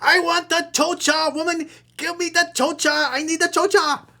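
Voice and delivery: very high, angry, upset, demanding man's voice. Mocking a man from an email exchange: imitating an angry upset man. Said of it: "He's angry. He's upset".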